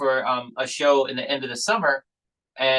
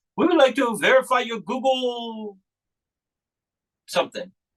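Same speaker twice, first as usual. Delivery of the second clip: put-on Indian accent, pitched very high; 10 semitones higher than usual. Retelling what a phone caller says: imitating an indian accent. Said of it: "it's like an Indian accent".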